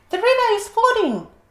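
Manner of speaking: squeaky voice, very high and loud. Narrator reading the Giraffe warning the worried animals, squeaky Giraffe voice. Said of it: "said the Giraffe in a surprisingly squeaky voice".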